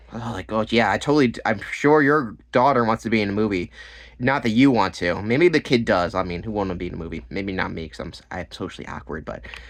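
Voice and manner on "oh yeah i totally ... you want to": ordinary talk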